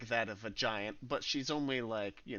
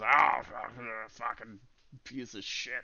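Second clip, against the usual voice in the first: loud, grumbling, grumbly character voice; 7 dB louder than usual. A game narrator voices a man stumbling out of a tent, in a grumbly voice. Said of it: "this grumbly ass voice".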